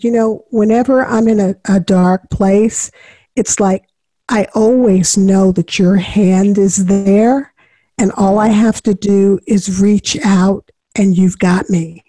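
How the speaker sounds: ordinary talk, nothing marked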